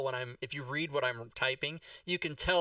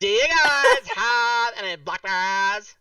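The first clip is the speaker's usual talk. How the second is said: put-on woman's voice, higher and louder; 8 semitones higher, 12 dB louder than usual. Retelling a woman who came in and talked that way, imitating that woman's voice. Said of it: "that voice".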